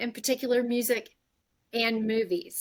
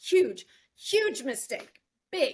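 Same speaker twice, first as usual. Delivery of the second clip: sarcastic delivery, pitched higher; 4 semitones higher than usual. Quoting a favourite movie line: sarcastic Julia Roberts line delivery. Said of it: "she had this perfect way of delivering a line".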